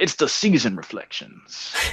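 horrible put-on movie voice, whispered and breathy. Asked by the co-host to kick off the segment, in a horrible movie voice. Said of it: "That's a horrible movie voice".

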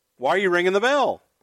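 play-acted, irritated, exasperated, high-pitched yelling. Retelling yelling at the timekeeper after the bell rang: retelling own yell. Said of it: "And I'm yelling at the timekeeper".

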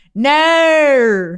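loud, drawn-out mock Australian "no". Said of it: "make fun of the Australian accent".

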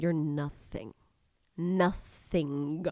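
very quiet, low, guttural voice. Recalling speaking to their reflection in the mirror while upset, in a low guttural voice. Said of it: "lower my voice ... like the guttural".

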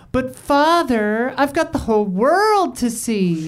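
feminine voice, pitched high and drawn out. Imitating unhinged voice acting from a trailer: Pauly Shore's feminine Pinocchio voice. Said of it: "more feminine".

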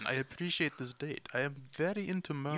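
soft, horrible put-on Russian accent. Imagining what a date would say, horrible russian accent. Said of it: "You guys are horrible at Russian".

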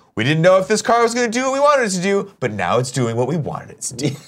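high, stupid, fake newscaster voice. Imitating the hosts of car shows talking to the camera: stupid fake news voice. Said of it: "in that stupid fake news voice".

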